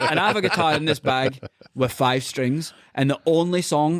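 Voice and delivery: plain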